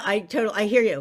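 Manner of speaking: plain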